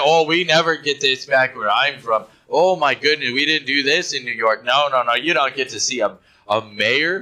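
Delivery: ordinary delivery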